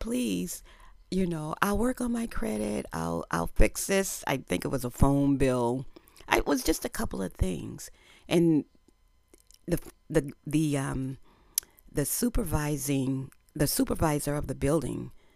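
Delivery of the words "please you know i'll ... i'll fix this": high, earnest, begging pleading voice. Retelling how you begged to get the apartment despite bad credit, act out the pleading. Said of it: "But it was like I pleaded".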